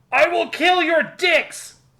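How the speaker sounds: very high, very slow, drawn-out shout. Reading out a line from a game: yelled. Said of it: "I'm going to try to yell this because it needs to be yelled".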